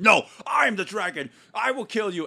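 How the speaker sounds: very high, hyped-up scream at the top of the lungs. Describing someone overacting in a scene, imitating him screaming at the top of his lungs. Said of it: "screaming at the top of his lungs".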